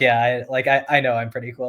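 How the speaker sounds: ordinary talk, nothing marked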